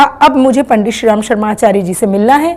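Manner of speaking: plain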